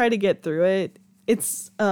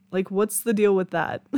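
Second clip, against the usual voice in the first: ordinary talk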